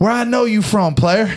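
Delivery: menacing, very high, loud intimidating voice. Retelling how an inmate confronted a staring kid: imitating an intimidating inmate. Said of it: "he just spooked the kid".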